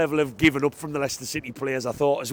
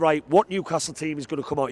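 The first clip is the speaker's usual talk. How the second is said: normal talking voice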